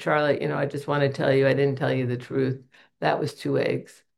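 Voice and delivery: ordinary talk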